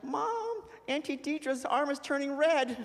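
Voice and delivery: very high-pitched voice.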